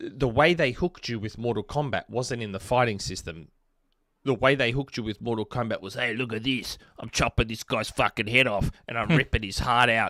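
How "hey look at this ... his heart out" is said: put-on full Australian accent. Acting out how a game hooked players: broad australian accent. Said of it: "That's the most Australian you've ever sounded".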